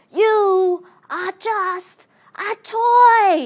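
loud, slow demanding voice with "toy" stretched out. Parent quoting a film line their son copies, mock-demanding Woody voice. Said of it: "in that demanding sort of voice".

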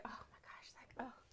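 exaggerated, acted weariness. Retelling how she acts after sex, acting out own dramatic tiredness. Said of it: "being all dramatic".

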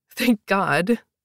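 spoken with a giggle. The narrator answering Dad, who says the dancing is optional, with a giggle. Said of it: "I said with a giggle".

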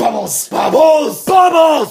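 furious, shrill angry yell, very high, very loud. Showing that bubbles can't sound angry: saying bubbles angrily. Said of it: "impossible to say bubbles in an angry way".

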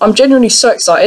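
ordinary delivery

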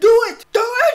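squeaky-high, shrill, enraged, taunting angry tone. Commentator mimicking the angry people in a video, mock-angry high-pitched voice. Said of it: "everybody's voice just going higher the angrier they are".

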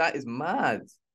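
laughing through the words, can't keep straight face. Reacting to being told about a plan to smuggle someone into Cambodia: laughing while talking. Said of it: "I can't keep a straight face".

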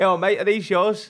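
put-on proper London cockney accent, workman's voice. Retelling what a cockney wardrobe fitter said: imitating a cockney wardrobe fitter. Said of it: "a proper cockney to come and fit it".

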